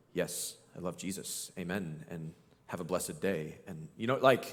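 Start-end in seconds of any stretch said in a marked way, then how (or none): 0.2-3.6 very low, very soft, sterile, pious church-elder murmur. Mocking how bible characters get read, imitating a sterile church elder. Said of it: "like every character in it's like a church elder".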